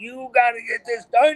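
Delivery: mock, very high-pitched screaming. Recalling long riding days, reenacting screaming at oneself. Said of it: "I was screaming at myself".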